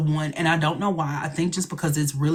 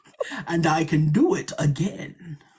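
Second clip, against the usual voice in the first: slow, bubbly put-on British accent, villain-like. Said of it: "somebody requested something, so wait, let me do it again".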